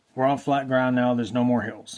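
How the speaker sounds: ordinary talk, nothing marked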